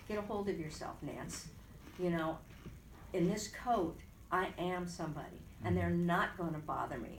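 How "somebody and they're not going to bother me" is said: ordinary talk, nothing marked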